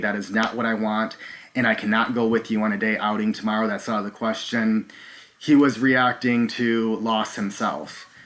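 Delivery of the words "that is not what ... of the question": ordinary delivery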